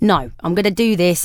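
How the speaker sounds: ordinary talk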